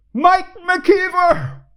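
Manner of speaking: very high-pitched booming dramatic voice. Retelling looking for an escape route when a voice called out, imitating a booming voice. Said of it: "A booming voice said".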